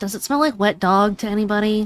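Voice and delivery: muttering under breath. Speaking as her character to the others, muttering under her breath. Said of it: "mutter under her breath".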